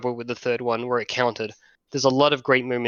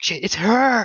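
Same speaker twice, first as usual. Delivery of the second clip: startled, high gasping exclamation of recognition; 9 semitones higher, 3 dB louder than usual. Retelling how a wife reacted in the cinema: imitating a gasping exclamation. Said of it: "she gasps".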